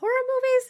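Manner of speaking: voice rising in pitch on horror movies. Showing how the voice goes up at the end: rising question intonation. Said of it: "my voice kinda goes up a little bit".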